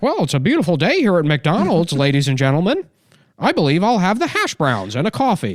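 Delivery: stiff, prim, overly proper sing-song voice.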